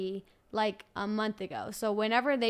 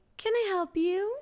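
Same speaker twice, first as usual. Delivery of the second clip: put-on very high, sweet, cute toddler voice; 9 semitones higher than usual. Retelling a two-year-old offering to help with the laundry, cute little toddler voice. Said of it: "just the cutest little voice".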